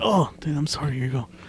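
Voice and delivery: mild, easygoing, apologetic voice without fuss. Act out Jeff King apologizing after getting your drink at Starbucks by accident, in a Jeff King impression. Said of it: "That's my impression of Jeff King".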